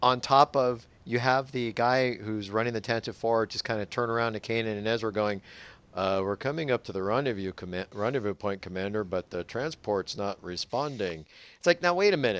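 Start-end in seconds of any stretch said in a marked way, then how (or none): 5.9-11.2 level, flat, unemphatic delivery with no urgency. Retelling a crew member's report to the Commander: imitating a flat line delivery. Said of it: "the line felt a little bit flat".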